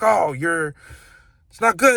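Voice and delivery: acted angry scolding. Retelling a teacher's reaction to being shown the middle finger: imitating a mad teacher. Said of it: "really mad".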